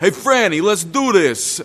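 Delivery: put-on boisterous, loud, high Brooklyn accent bellow. Recounting a big man stepping through a barn door, retell his Brooklyn-accent bellow. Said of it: "he bellowed in this boisterous Brooklyn accent".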